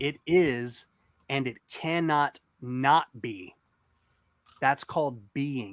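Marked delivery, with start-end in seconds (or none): 0.0-3.5 deliberately slow, much slower delivery. Repeating a logical statement so listeners can follow, speaking slower. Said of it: "Let me say that slower".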